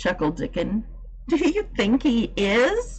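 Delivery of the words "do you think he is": eager, hopeful, high-pitched and drawn-out. Reading Mary's question to Dickon about the robin; eager. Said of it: "Cried Mary eagerly".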